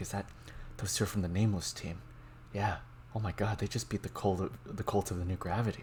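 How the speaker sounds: hushed, whispered crowd-like murmuring chatter. Voicing civilians talking about the passing team: whispering. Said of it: "hear them whispering, like".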